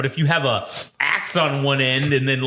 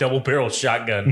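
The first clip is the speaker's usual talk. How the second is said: usual speaking voice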